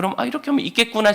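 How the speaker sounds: high, fast, eager voice.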